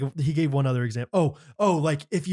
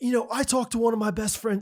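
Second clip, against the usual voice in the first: rough, bad, put-on Australian accent, pitched up; 7 semitones higher than usual. Retelling what a preacher said: imitating John Tyson in a bad Australian accent. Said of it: "I'm doing such a bad Australian accent".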